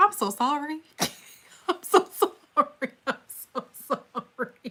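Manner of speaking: speaking through laughter. Apologizing for laughing at a comment: laughing while talking. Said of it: "I don't mean to laugh".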